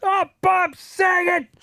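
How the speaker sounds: very high, shrill, sudden yell. Retell how you reacted on learning that Bob Saget died, imitating a Tourette's Guy yell. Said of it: "I instinctively yelled out in".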